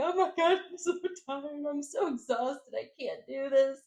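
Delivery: tearful crying. Retelling a call to a best friend, imitating own tearful words. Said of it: "I started crying".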